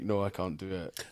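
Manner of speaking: scared, panicky, fearful voice. Retelling own past refusal to touch an eyelid on camera: imitating own fearful voice. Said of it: "you can hear the fear in my voice".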